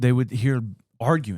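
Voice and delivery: plain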